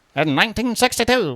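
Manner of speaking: put-on old-time newscaster accent. Telling a story, then repeating a date in a mid-Atlantic newscaster accent. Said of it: "Should I say that in like the mid-Atlantic accent".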